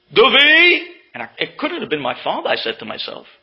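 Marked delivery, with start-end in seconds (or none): 0.1-0.8 shrill, very loud, stern, intimidating shout. Retelling being called by name from a gate: imitating an intimidating shout. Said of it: "that voice was so intimidating".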